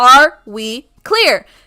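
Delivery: booming, very loud, projecting call. Retelling the spiel given to everyone about a one-per-person limit, loud projecting voice. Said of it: "I project in my loud voice".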